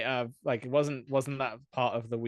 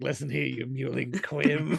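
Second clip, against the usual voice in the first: put-on pompous villain voice. Quoting a movie line as another character: Lord Farquaad voice. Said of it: "when Lord Farquaad's like".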